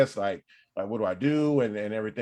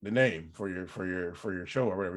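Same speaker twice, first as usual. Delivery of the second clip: mock deep burly voice, much lower, quieter; 3 semitones lower, 6 dB quieter than usual. Telling how a man pitched a name for the speaker's show, imitating his deep burly voice. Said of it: "he has this like deep burly voice".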